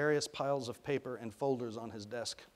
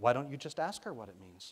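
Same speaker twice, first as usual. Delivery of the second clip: plain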